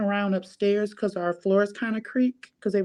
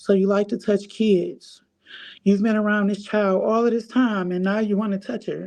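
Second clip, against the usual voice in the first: plain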